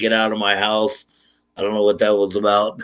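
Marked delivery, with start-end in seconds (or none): none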